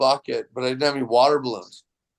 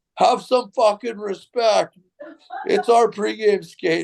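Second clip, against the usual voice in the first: acted furious shouting, angry and high-pitched; 8 semitones higher than usual. Up on the catwalk, retelling how Marvin Powell yelled at him, retelling angry yelling. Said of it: "Marvin Powell's yelling at me".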